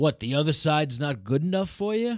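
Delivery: put-on Bronx New York accent. Retelling what a man said to you as you rode past on your bike: New York Bronx accent. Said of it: "I gave him that like New York like Bronx accent".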